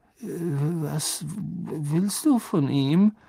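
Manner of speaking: trembling, very slow, "was" drawn out. A narrator reads Ernie's question to Harry, in a shaky voice. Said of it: "sagte Ernie mit zittriger Stimme".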